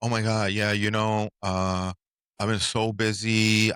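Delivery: very slow, drawn-out, clueless put-on voice. Quoting people at an event, mock-clueless voice. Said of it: "I don't know why I'm using that voice ... that clueless voice".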